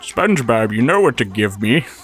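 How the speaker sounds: put-on old-man cartoon voice. Showing how the old Plankton impression sounded: Plankton voice. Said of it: "I sound like an old man trying to tell SpongeBob".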